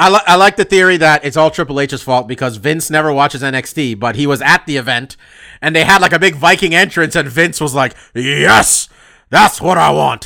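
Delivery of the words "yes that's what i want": slow, drawn-out, rough, creaky, poorly put-on voice. Retelling how a boss reacted to a Viking entrance: terrible Vince McMahon impersonation. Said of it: "That's my terrible Vince impersonation".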